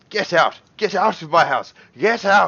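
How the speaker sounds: very high-pitched, shrill, loud screeching. Narrating a game scene, the speaker voices a character screaming at the player. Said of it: "He's screaming and he's trying to push you out".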